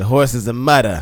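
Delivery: terrible New York accent. Saying how horses on wet tracks are called: terrible new york accent. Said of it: "That was a terrible New York accent".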